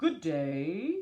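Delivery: loud, growling wolf voice, words stretched. Narrator reads the wolf greeting the girl in the woods, growling wolf voice. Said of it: "growled the wolf".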